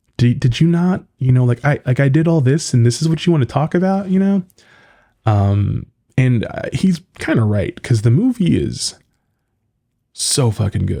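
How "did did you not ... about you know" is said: high, annoyed, fed-up, exasperated voice. Retelling how a man sounded in a conversation, imitating his exasperated tone. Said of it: "you could just hear in his voice".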